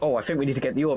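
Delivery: helpful, game-style hint-system prompt voice. Mocking how the game offers hints: imitating the game's hint system. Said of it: "And it just goes".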